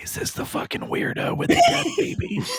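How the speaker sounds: hushed, whispered stage whisper aside. Retelling how one character whispers to another about a newcomer: imitating a whisper. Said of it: "whispers to Fragile".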